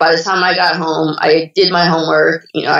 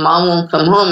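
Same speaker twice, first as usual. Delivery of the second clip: ordinary talk, nothing marked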